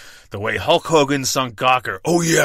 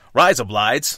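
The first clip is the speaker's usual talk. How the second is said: awful put-on Australian accent; 3 dB louder than usual. Asked for their best Australian accent, doing a bad Australian accent. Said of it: "Let's hear your best Australian accent".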